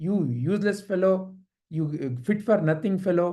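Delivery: ordinary talk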